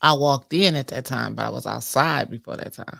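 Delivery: low voice with too much bass. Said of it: "I got too much bass in my voice".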